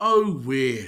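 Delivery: heartfelt, sincere, low and emphatic. Teaching a phrase, the speaker models the reply for listeners: said like you mean it. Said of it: "like you mean it".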